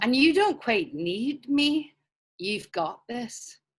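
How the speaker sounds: put-on Scottish accent. Playing a sat nav in a comedy game: Ewan McGregor voice. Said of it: "Ewan, you like Scottish".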